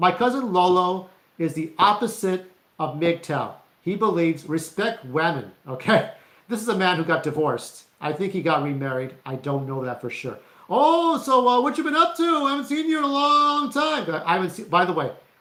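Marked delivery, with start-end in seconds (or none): 10.7-14.1 very high, loud voice, casual tone. Imitating a cousin chatting at a family get-together: imitating cousin Lolo. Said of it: "I'm doing an impression of my cousin Lolo".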